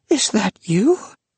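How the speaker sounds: gasping out the words. A man at his door recognizing the narrator across the years, gasping. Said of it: "he gasped".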